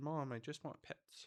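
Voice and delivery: very quiet, hushed, soft cat voice. Holding the cat and voicing what she says: voicing the pet cat. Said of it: "She says".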